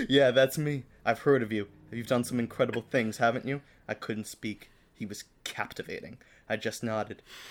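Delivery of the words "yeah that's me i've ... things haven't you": ordinary delivery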